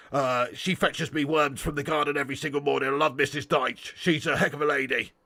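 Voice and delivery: raspy, throaty, half-decent put-on voice. Doing a half-decent impression after a viewer comment: Sean Dyche impression. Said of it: "do an half-decent impression of both of them".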